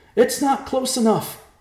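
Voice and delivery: shrill, loud yell, pitched way up. [name] yells back at Riverpaw as a monster dives from the sky, yelling. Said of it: "[name] yelled".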